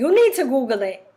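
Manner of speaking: cute, put-on New York accent. Imitating a cousin during an argument: new york accent. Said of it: "My cousin has a real cute New York accent".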